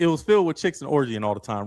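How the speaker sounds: normal talking voice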